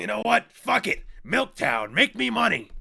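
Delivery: rough, loud yell with swooping pitch. Answering the other speaker by repeating his line in a Vince McMahon voice. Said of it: "you sound like Vince McMahon from W W E".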